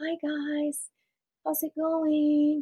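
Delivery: put-on small, high, timid, unsure childlike voice. Speaker recalls old videos from first starting the business, imitating own childlike past voice. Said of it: "I sounded like a child".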